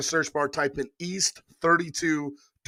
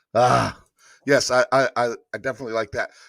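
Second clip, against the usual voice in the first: ordinary talk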